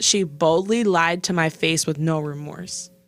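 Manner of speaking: ordinary talk, nothing marked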